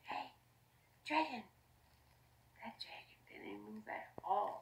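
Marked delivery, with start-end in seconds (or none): 0.1-1.4 whispering very softly, hushed. Elizabeth speaks to a sleeping dragon, whispering very softly. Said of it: "Elizabeth whispered very softly".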